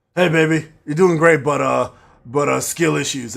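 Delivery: voice of a lifelong heavy smoker. Imitating Ryan talking to his girlfriend: imitating Ryan's voice, heavy smoker. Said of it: "that's actually what he sounds like".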